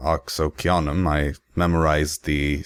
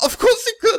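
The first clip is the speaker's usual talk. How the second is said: acted out, very high voice, holding back tears; 4 dB louder than usual. Voicing a character answering someone who says she could have healed it: fighting back tears. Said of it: "kind of fighting back the tears".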